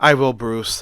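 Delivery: ordinary delivery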